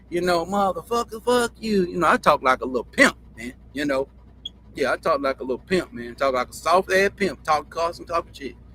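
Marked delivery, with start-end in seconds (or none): 0.4-1.8 thick, hard, pitched-up country drawl with cussing. Imitating how he cursed as a kid: hard country drawl. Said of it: "But it be in a country draw like".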